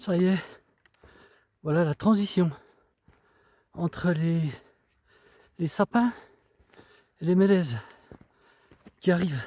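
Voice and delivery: breathless, winded. Outdoors on the move, describing the change in trees, out of breath. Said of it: "Qu'est-ce que je suis essoufflé aujourd'hui".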